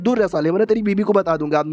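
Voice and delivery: ordinary delivery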